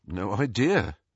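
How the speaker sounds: ordinary delivery, nothing marked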